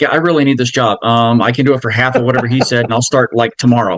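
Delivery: ordinary talk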